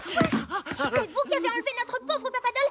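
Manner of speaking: ordinary talk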